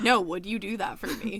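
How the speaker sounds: pretend deadpan seriousness. Acting out how to ask a partner a question: mock dead serious. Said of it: "And be dead serious".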